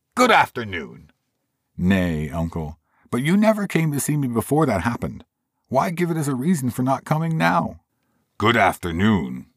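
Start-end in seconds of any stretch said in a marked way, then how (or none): 1.7-7.8 cheery, lively voice, high and swooping. Reading the story, the nephew answers his uncle's repeated dismissals: cheerful voice. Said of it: "cried a cheerful voice. It was the voice of [name]'s nephew".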